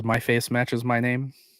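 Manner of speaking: normal talking voice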